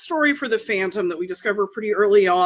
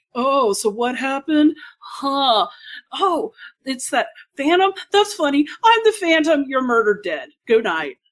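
smooth and easy voice, pitched up; 5 semitones higher than usual. Retelling a scene where the Phantom comes in drinking: smooth Phantom voice. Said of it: "he's all smooth and is, like, drinking".

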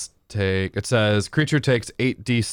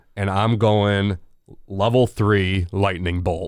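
ordinary talk

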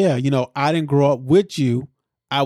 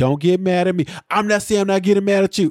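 mock irritated, defensive, angry, heated tone; 5 semitones higher than usual. Retelling a woman's reaction to being told she's off the project, imitating her getting mad. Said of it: "She gets mad, and she says".

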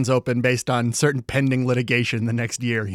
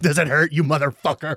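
plain

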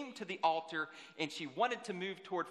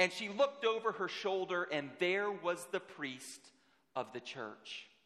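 usual speaking voice

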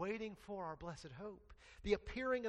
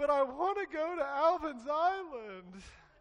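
high, very loud, very slow mock child crying; 9 semitones higher, 9 dB louder than usual. Recounting the girl's reply on hearing about Disney World: imitating a crying child. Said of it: "and she cries".

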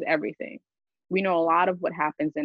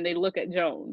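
plain

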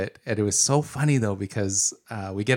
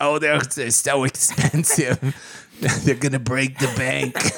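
put-on elderly man voice, pitched up; 5 semitones higher, 3 dB louder than usual.

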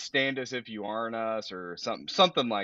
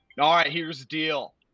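put-on worst-ever, failed Philly accent, pitched up; 6 semitones higher, 4 dB louder than usual. Imagining the judge at the stadium court talking, bad Philly accent. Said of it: "That's the worst accent I've ever heard".

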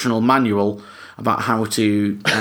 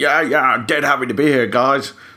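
higher-pitched put-on impression with a Swedish-sounding accent; 3 semitones higher than usual. Doing a famous impression for the edit, Clive impression. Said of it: "It sounded like a Swedish accent".

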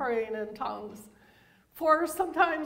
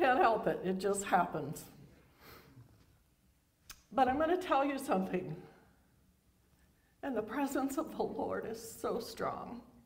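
tearful, weepy, teary speech; 3 semitones lower, 4 dB quieter than usual. Speaking to the church congregation, crying while talking. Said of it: "why do you have to cry so much?".

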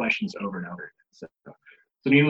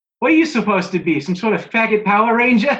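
put-on very high, loud young girl voice; 10 semitones higher, 7 dB louder than usual. Retelling an eight-year-old girl's heckle: imitating a girl's accent. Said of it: "And she had the accent".

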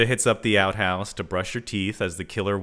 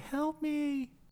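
put-on very high, very hushed, soft little-kid cry; 9 dB quieter than usual. Retelling a scene where the killer lures someone: imitating a little kid yelling for help. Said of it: "she hears someone yelling".

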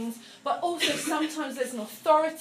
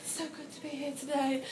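much quieter, soft-spoken voice; 7 dB quieter than usual. Teaching about pitch, pace and volume, the speaker demonstrates a quiet delivery. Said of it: "or whether you're like".

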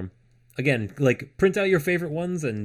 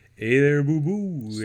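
put-on, old-school cartoon character voice. Trying voices from old cartoons: cartoon character voice. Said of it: "At least I can do this voice all right".

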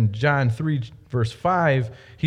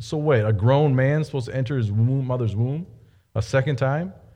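ordinary delivery

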